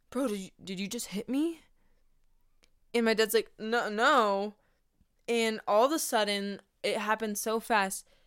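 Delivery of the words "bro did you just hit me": mock-accusing tone, quieter and faster. Telling a story, quoting a man confronting the speaker's dad: retelling an accusing question. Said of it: "looks at my dad and goes".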